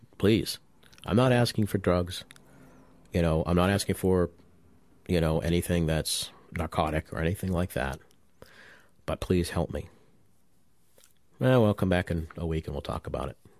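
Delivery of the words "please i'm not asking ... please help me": usual speaking voice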